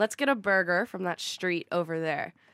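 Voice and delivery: American accent with t's barely sounded, softened. Showing how they'd say a sentence in an American accent, soft T's. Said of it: "How I would say it is, ... We don't say our T's. ... In my American accent".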